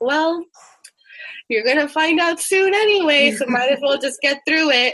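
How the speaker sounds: acted casual, unbothered mother voice. Telling listeners what their mom would say in hard times, imitating mom, nonchalant. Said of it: "in a very nonchalant manner".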